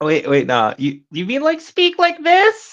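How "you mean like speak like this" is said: very high, swooping, rising fake woman's voice. Mocking the idea of faking a woman's voice to friends: mock high-pitched voice. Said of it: "throw on a high pitched voice".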